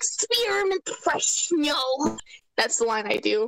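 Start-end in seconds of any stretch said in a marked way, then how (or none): 0.0-2.2 put-on elderly old lady granny voice. Describing character voices, the speaker demos Grandman's line in an old lady voice. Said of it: "I get an old lady kind of voice".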